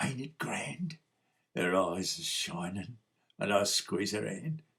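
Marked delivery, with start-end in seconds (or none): 0.0-1.0 hushed, soft half-whisper. Narrating a scene at a play, reading a woman's line to the narrator, half-whispered. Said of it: "She whispers".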